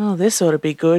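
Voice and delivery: low self-directed mumble. Lighting a new cigarette as another man announces an extreme proposal, he remarks: muttering. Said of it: "he muttered".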